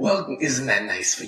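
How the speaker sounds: put-on soft, purring, corrupted evil Jersey accent. Narrating a tavern scene, voicing Bridge Troll replying to a player in a corrupted evil Jersey accent. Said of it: "corrupted evil Jersey accent".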